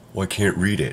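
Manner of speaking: ordinary talk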